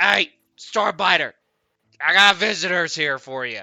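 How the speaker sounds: shrill, very loud, high goblin voice. Voicing a goblin calling through a door: goblin voice. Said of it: "he goes up to the door and he says".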